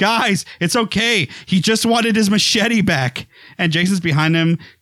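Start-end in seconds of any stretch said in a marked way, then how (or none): 0.0-3.3 mock yell, much higher pitched. Retelling a film scene, a character calls to the survivors: imitating someone yelling. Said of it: "trying to show that he's yelling to all the students".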